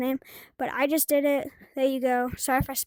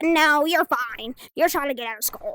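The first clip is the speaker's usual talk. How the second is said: put-on grouchy old woman voice, louder; 4 dB louder than usual. Retelling what the school nurse said: imitating a grouchy old lady. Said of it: "a grouchy old lady's like".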